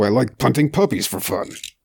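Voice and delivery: big, beefy, burly voice. Describing the raider he played and showing the voice he used: big beefy raider voice. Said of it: "a really big, beefy voice".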